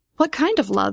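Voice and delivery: ordinary talk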